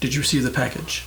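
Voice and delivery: stern, firm voice. Voicing a voice heard in the character's head: stern voice. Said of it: "It's a stern voice just starts talking".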